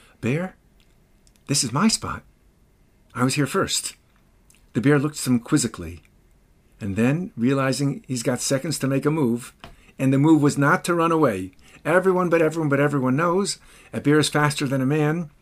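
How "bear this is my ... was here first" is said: hushed, secretive stage half-whisper. A storyteller voices an Israeli general facing a bear, retelling a barely audible half-whisper. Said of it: "In a barely audible tone, he whispers".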